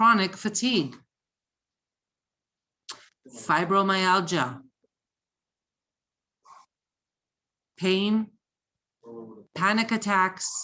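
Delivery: slow, dictation-like pace. Reading a list aloud slowly so listeners can write it down: reading slowly. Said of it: "I'm gonna read this slowly".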